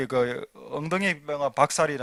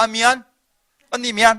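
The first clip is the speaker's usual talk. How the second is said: loud, high-pitched, careless and insincere tone; 7 semitones higher, 8 dB louder than usual. Recounting his two children's quarrel as an example, imitating an insincere apology. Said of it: "마음에도 없이 마음에도 없는 말을 말만 하는 겁니다".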